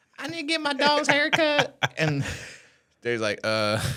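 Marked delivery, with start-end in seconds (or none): 0.2-1.8 put-on very high squeaky little girl. Retelling a young girl phoning about her dog's haircut, in a squeaky eight-year-old voice. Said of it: "this little eight year old squeaky voice".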